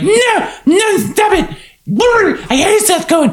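high-pitched voice projected so it carries. Retelling a scene where Summer denies liking Seth: imitating Summer's carrying voice. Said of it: "a voice that would carry".

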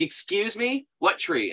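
irritated put-out tone. Retelling a phone call with a guy at a hotel: imitating an annoyed hotel worker. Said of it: "really annoyed at me".

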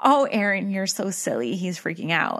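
normal talking voice

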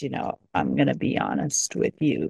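put-on very gravelly, raspy old man voice. Retelling a man in a video talking into the mirror, in a really gravelly old voice. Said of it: "in this really gravelly old voice".

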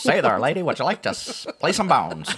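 put-on very loud, high, old-fashioned old-timey voice. Joking about sitting on the porch playing dominoes when older, old-timey voice. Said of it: "I like his old-timey voice".

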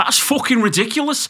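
put-on northern English accent.

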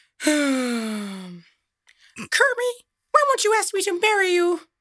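very high, swooping, dragged-out voice. Asked by the others, trying a Miss Piggy voice. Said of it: "do Miss Piggy".

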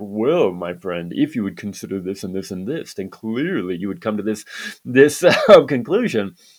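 patronizing, condescending, lecturing know-it-all tone. Speaker reenacts their own reply to a man's question, retelling own condescending tone. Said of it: "I have such a condescending tone right now".

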